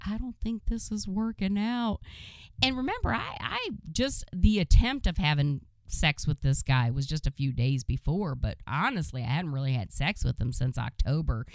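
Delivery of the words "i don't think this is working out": put-on blubbered words, high and bawling while sobbing. Telling how a guy was bawling on the porch: imitating a man bawling. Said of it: "And he's bawling, and he's like".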